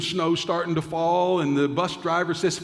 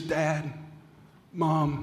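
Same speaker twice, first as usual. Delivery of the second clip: mock quivering, shaky, uncertain, hesitant voice; 5 dB quieter than usual. Telling a story, acting out her finally getting through on the phone: retelling a quivering, uncertain voice. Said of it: "with a quivering, uncertain voice, she says".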